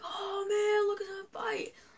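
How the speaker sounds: very high-pitched, excited cheer.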